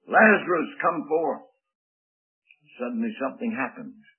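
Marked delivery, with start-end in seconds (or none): 0.1-1.4 loud, commanding voice. Speaker repeats how the Lord called Lazarus out of the tomb, retelling a loud command. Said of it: "in a loud voice, a voice of command".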